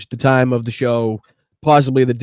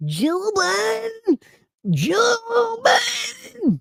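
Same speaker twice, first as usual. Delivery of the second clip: very high, slow, swooping drawl, "Joe" drawn out; 5 dB quieter than usual. Reacting to a played clip, trying a Don Junior impression. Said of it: "I'm trying to do my Don Junior impression".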